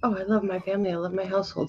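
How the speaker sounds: soft, quiet, sweet-sounding sarcasm meaning the opposite.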